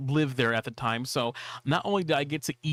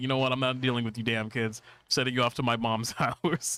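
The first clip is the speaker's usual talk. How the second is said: plain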